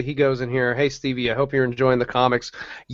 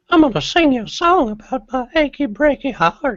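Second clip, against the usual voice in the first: exaggerated very high, squeaky, sing-song, swooping put-on voice; 12 semitones higher than usual. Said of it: "do the Herbert voice anymore".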